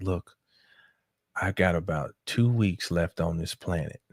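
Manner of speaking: feeble, faint, weak, soft voice. Retelling a phone call with a lady, imitating her weak voice. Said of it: "her voice was very weak and she's like".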